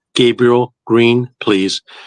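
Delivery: put-on metallic male voice. Retelling what a voice on the phone said, imitating a metallic male voice. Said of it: "it was a male voice and it sounded metallic".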